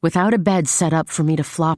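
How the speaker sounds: plain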